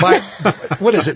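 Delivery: playful teasing, high, loud, with laughter.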